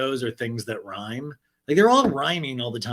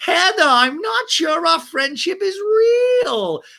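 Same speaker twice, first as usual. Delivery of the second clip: high, loud, slow wail while crying. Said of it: "Gina going on at Nobu going".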